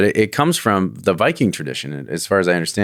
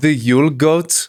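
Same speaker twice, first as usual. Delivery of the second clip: put-on Swedish accent, higher, sounding more Indian; 7 semitones higher than usual. Reading aloud after being told to use a swedish accent, attempted swedish accent sounding indian. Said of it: "I sound Indian".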